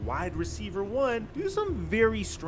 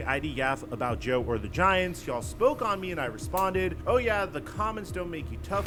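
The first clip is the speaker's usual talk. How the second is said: plain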